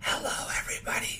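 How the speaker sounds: breathy, quiet whisper.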